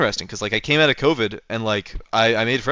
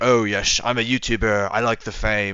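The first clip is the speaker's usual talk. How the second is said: silly, slow, deliberately dumb put-on voice. Speaker mocks the idea of being a youtuber in a dumb put-on voice. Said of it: "I don't know what voice I'm doing right now".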